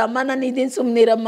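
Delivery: plain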